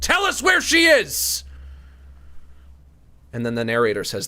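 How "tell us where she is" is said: mock very high, deliberate, drawn-out cop bark. Imitating an interrogating cop after slamming the table: imitating a shouting cop. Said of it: "And then they slam the table".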